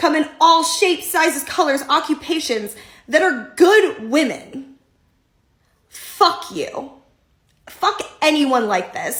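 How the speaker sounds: spitting-mad, furious, fed-up rant. Answering someone who shames other women: so mad she can't talk. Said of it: "I'm so mad I can't even talk".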